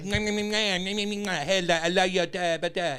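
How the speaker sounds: loud, high French cartoon voice. Explaining a cartoon skunk who chases a cat: Pepe Le Pew voice. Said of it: "And he's like a French, like, skunk".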